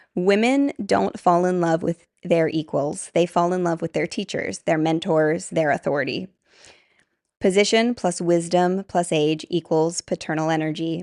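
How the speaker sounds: usual speaking voice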